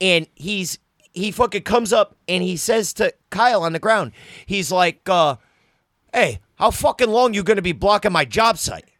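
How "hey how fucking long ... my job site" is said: put-on Italian-American accent. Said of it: "they speak in a certain way".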